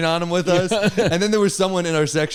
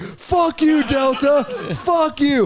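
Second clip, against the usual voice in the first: mock very high, dragged-out, furious ranting yell; 9 semitones higher than usual. Telling about a hugely delayed flight and yelling at the airline, retelling a furious meltdown. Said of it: "I can't have public meltdowns".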